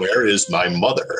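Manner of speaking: deep, booming adult voice. Voicing an eleven-year-old character who talks like James Earl Jones. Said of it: "an eleven-year-old that talks like James Earl Jones".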